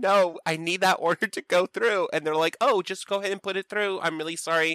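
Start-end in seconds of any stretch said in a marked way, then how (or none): 0.0-2.1 acted, panicked, pleading tone, pitched much higher. Retelling a call to customer service, acting out panicking. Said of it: "So I'm panicking and I'm like telling them".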